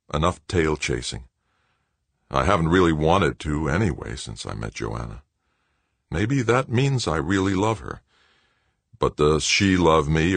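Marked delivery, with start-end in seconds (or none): none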